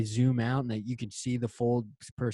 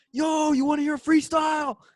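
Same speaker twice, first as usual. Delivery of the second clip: put-on, shrill, very high-pitched shout; 4 dB louder than usual. Retelling how a dude yelled to you as you biked past; imitating a guy yelling. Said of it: "he yelled to me as I'm passing".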